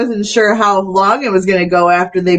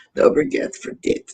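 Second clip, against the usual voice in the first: breathy whisper on the breath; 8 semitones higher, 8 dB quieter than usual. Saying the line the way the wrestler would say it: Masha Slamovich voice. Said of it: "That's how Masha Slamovich would say it".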